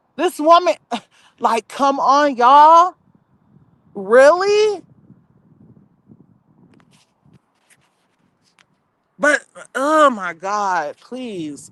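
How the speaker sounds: distressed, deeply upset, pleading tone. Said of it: "I'm just so upset right now".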